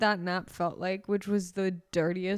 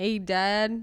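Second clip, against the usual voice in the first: put-on Southern accent. Speaker imitating how the other person talks to his dad, in a Southern accent. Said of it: "no, that was Southern".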